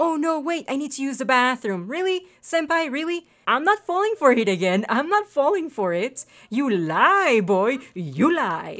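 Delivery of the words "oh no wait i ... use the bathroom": mocking, scornful put-on tone. Complaining that the date keeps leaving to use the bathroom, imitating Senpai's excuse. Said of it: "you're like".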